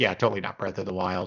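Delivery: mock knowing, dry, sarcastic throwaway tone. Retelling a running joke from streaming with a friend: retelling own sarcastic remark.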